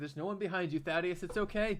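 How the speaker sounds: condescending, patronizing, soothing, reassuring tone. Patting another character on the back in character, condescending. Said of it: "I condescendingly pat him on the back and say".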